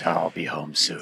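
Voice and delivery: very low, slow, drawn-out rumble. Telling the other person to use a low voice on the ring camera: low voice. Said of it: "get on the ring camera with your low voice".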